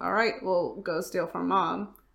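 ordinary delivery

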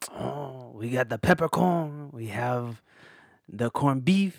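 slow, put-on French accent. Playing a deli worker listing sandwiches in a skit: french accent. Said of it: "I'll speak in a French accent".

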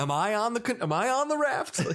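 put-on sarcastic tone. Retelling a film character's reply to a little girl, sounding mock-sarcastic. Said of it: "He's also really sarcastic to the girl".

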